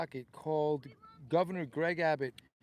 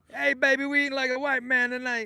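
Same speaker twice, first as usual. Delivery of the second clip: shrill cry, very loud and very high-pitched; 9 semitones higher, 9 dB louder than usual. Thanking a donor, quoting what Don King used to say: Don King voice. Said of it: "That's what Don King used to say".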